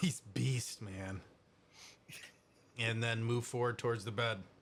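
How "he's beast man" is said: low, muttered remark to no one. Playing a character glancing back at a fight: muttering under breath. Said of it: "just under my breath be like".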